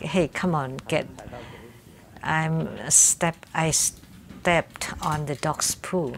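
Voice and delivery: ordinary talk, nothing marked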